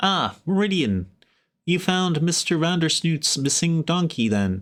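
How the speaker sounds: small creature voice. Narrator voicing an unseen speaker, probably a gnome, greeting Meridian: gnome voice. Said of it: "probably a gnome".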